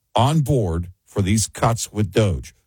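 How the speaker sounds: plain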